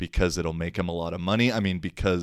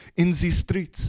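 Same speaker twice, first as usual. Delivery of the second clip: clumsy put-on French accent, very high-pitched; 11 semitones higher than usual. Repeating a french girl's phrase, in a bad french accent. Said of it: "my French accent's terrible".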